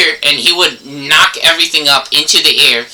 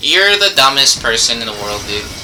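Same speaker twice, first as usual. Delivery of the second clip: normal talking voice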